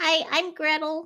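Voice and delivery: very high-pitched, tiny creature voice. Telling a story, a pebble answers a woman asking its name, in Gretel's little voice. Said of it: "And the little voice says".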